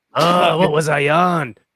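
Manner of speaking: drawn-out, gravelly, high-pitched voice. Showing the gravelly voices done last week: Krusty the Clown voice. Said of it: "And then it's Krusty the Clown".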